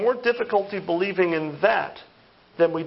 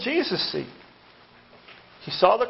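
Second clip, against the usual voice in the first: plain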